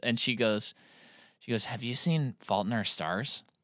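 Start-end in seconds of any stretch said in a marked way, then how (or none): 1.6-3.4 play-acted, very serious, grave and solemn tone. Retelling what a woman asked a friend: imitating someone very serious. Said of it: "she got very serious".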